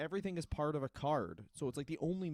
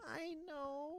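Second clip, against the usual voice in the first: squeaky high-pitched echo; 12 semitones higher, 8 dB quieter than usual. Echoing the other speaker's words right after them: impression of the other speaker. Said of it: "Don't do such an accurate impression of me".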